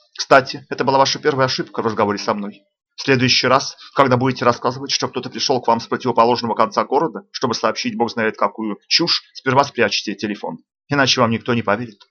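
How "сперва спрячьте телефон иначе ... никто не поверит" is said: ordinary delivery, nothing marked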